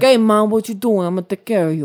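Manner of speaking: terrible, fake, put-on Italian accent. Retelling how a man spoke to his mom, in an Italian accent. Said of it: "I think it's Italian".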